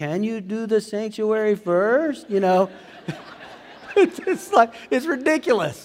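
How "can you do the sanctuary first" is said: put-on English spoken with a Spanish accent. Speaker reenacting talking to a woman at church, in a Spanish accent. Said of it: "I start having a Spanish accent".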